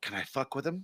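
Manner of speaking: sly, hushed whisper under the breath. Retelling a story, the speaker quotes his buddy whispering to him: retelling a whisper. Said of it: "whispers to me".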